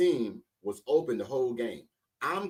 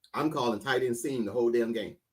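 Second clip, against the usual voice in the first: usual speaking voice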